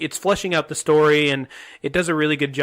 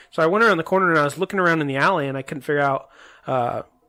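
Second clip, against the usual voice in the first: normal talking voice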